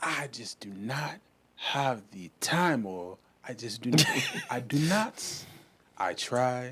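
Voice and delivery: put-on Nigerian accent. Mid-conversation, slipping into a Nigerian uncle voice. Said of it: "slip into your Nigerian uncle voice".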